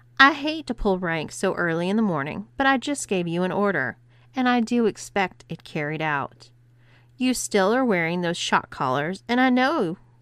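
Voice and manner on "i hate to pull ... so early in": plain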